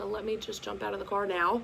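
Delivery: ordinary delivery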